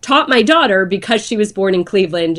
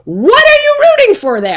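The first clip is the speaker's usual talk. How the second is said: shrill, swooping scream, loud across a room; 13 semitones higher, 5 dB louder than usual. Retelling how the husband screamed at her over a noise: imitating husband screaming. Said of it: "he screams at me".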